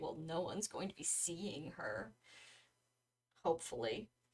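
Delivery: very low, hushed, quiet mumbled mutter. Voicing Alpheus from the outer circle of a conversation, muttering under his breath. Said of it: "kind of under his breath".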